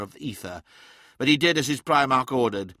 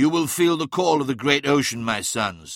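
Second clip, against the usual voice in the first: ordinary delivery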